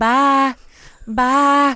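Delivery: real Southern drawl, high, loud, stretched out. Imitating how she has started saying bye, with a real Southern drawl. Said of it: "she says it with a real Southern drawl".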